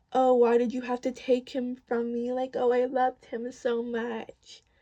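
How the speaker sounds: put-on screeching, sobbing, crying wail. Mocking how she behaves each morning, imitating someone screeching and crying. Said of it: "I'm talking like screeching in the morning, crying".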